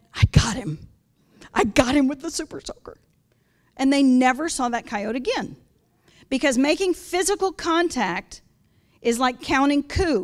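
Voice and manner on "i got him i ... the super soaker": put-on trembling, shaking old lady voice. Speaker retells a phone call from a little old lady: imitating an old lady's shaking voice. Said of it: "her voice was shaking on the phone".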